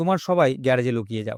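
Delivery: ordinary delivery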